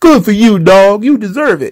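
cheering cartoon sidekick voice.

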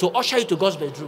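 normal talking voice

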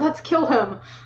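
soft, hushed half-whisper under the breath. Half-whispering a suggestion to the party in character: half-whispering. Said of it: "I whispered".

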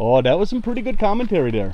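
loud, very high, put-on Minnesota accent. Commenting on a snake hunting in front of the hosts, in a Minnesota accent. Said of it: "I all of a sudden switched to a Minnesota accent there".

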